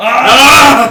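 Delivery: loud, high-pitched scream.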